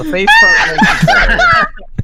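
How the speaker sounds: put-on laughing shout.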